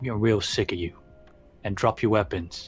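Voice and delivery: threatening, intimidating tone. A game narrator voices a figure at a ravine's edge ordering the players, threatening demand. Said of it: "He says".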